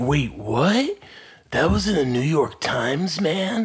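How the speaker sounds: high, slow, belated dawning realization. Retelling a friend's reaction to a news article: Scott impression. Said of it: "That's my Scott impression".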